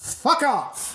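put-on British accent, pitched a touch high. Retelling a film scene, quoting Captain Corelli's line in a British accent. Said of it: "In a British accent".

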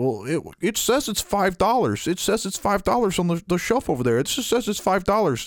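put-on fussy, high-pitched old woman voice.

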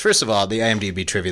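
ordinary delivery

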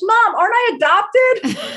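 put-on very high, very slow, drawn-out kid's yell. Retelling calling down the stairs to Mom as a kid: imitating own past scream. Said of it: "screaming down the stairs".

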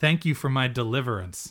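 ordinary talk

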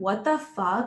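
plain

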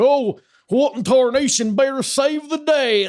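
very high, loud, slow, drawn-out cat voice. Voicing the pet cat watching the mic: put-on voice for the cat Dwayne. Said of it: "I don't know why that's his voice".

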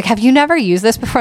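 put-on, all-excited, eager, fast voice. Retelling what a woman excitedly asked her, imitating her excitement. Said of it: "She was all excited when I got off".

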